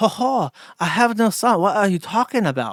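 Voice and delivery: fake, made-up Chinese accent. Imagining how a man's online post would sound, in a put-on chinese accent. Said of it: "How do I do Chinese?".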